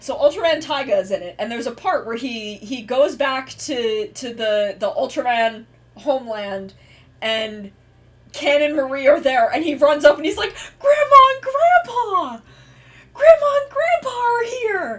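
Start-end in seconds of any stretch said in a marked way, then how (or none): 10.8-15.0 acted-out overjoyed yelling, very high and loud. Retelling a scene where Taiga runs up to his grandparents: imitating Taiga's excitement. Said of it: "And he gets so excited".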